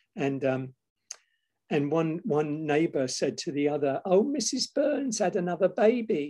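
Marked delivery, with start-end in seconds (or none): 4.0-6.2 comic British sketch voice pitched up. Retelling one neighbor's remark to another in postwar London, Monty Python voice. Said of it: "I put on my Monty Python voice for this".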